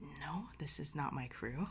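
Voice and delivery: soft, hushed whisper. Captain Elena, answering a player who leans in about her crew, whispering. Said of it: "she whispers back".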